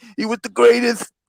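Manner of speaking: put-on very high-pitched, emotional voice. Doing a talk about Muhammad Ali as emotional Mike Tyson impression. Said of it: "I'm gonna do an emotional Mike Tyson talk".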